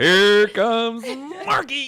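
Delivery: very high, very loud race announcer call. Teasing the other speaker about how she announced a name, doing a horse race announcer call. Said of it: "You said it like a like a horse race".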